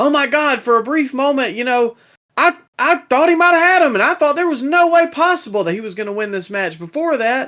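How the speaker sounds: high, fast, overdone astonishment.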